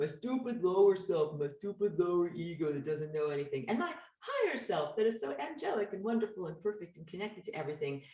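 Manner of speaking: put-on scornful, sneering, mocking tone. Contrasting the lower self with the higher self, in a put-on mocking tone. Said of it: "I'm mocking with my words here".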